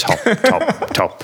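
very high, squeaky football commentator voice. Describing a top-level rugby athlete, doing a Jamie Redknapp impression. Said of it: "I sound like Jamie Redknapp".

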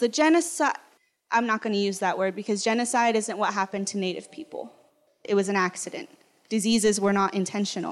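ordinary delivery

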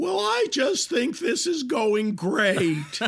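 very high, squeaky little voice. Retelling what a man said on coming back from the kitchen, in a high, squeaky voice. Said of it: "he has this high, squeaky voice".

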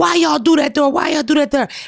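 crowd of voices yelling together, high-pitched. Retelling a crowd on a porch: imitating a crowd yelling. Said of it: "they yelling".

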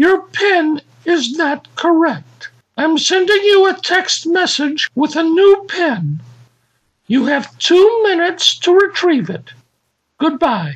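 very high recorded female automated machine voice. Retelling a call to the phone company: automated female voice. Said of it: "the machine says".

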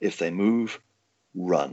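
very slow, drawn-out, loud, carrying stage whisper. Retelling what a security supervisor said before showtime: imitating a loud stage whisper. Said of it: "sort of like a loud stage whisper said".

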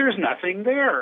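acted high, certain, dismissive brush-off tone. Retelling what the university's lawyer said each time: imitating her dismissive tone. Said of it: "with a certain tone in her voice like this".

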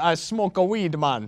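put-on deep Jamaican accent. Asked by a friend to do accents, a speaker performs a stereotype Jamaican accent. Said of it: "Do Jamaican".

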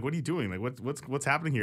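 ordinary delivery

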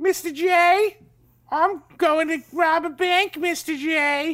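shrill, loud, overly performative old-timey cartoon voice. Describing how a cartoon character talks, Harley Quinn voice. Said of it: "Harley Quinn sounds like".

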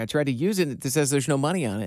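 plain

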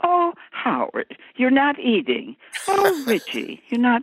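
slow character voice, each line drawn out. Retelling their lines as a character in the show: Missus C voice. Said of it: "You sound just like Missus C".

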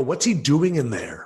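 normal talking voice

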